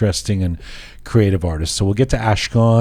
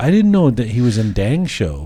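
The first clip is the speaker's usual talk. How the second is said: ordinary delivery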